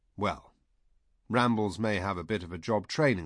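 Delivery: ordinary delivery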